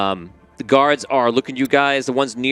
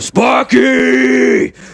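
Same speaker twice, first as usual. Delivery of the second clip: rough, very high, very loud enraged shriek; 13 semitones higher, 8 dB louder than usual. Voicing the half-orc walking forward, breathing hard: enraged. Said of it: "no one's ever seen him at this level of mad".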